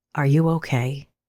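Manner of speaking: mock deeply concerned, low, gentle voice. Retelling how a waiter leaned over the speaker on the ground: imitating deeply concerned gentle voice. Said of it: "says in this deeply concerned, gentle voice".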